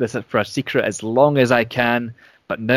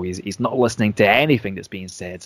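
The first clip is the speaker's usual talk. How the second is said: ordinary delivery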